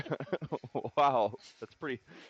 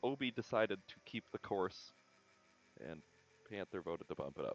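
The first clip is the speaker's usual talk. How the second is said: put-on, sheepish, very hushed and very quiet; 6 semitones lower, 11 dB quieter than usual. Retelling admitting how the other players voted: imitating saying it sheepishly. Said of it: "I kind of sheepishly shit, ugh, say".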